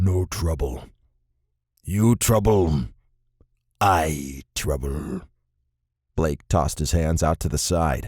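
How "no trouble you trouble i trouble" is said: very slow, low, deep guttural creature voice. Narrator reads a reptilian humanoid's line to Blake in a deep, guttural voice. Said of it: "in a deep, guttural voice said".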